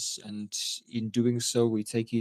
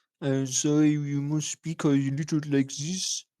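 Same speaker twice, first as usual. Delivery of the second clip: put-on French accent in English; 4 semitones higher, 3 dB louder than usual. Explaining how they were taught to speak french: french accent. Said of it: "I was taught the way to speak French is to imagine".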